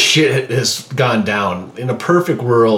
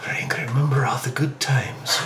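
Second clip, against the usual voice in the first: put-on soft, far-off whisper in a Russian accent; 3 semitones higher, 8 dB quieter than usual. Describing a far-off voice the others hear, speaker voices it in a whispering russian accent. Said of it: "like this whispering Russian accent".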